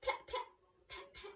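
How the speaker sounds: breathy, whispery voice breathed out as a whisper. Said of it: "She used to talk like this".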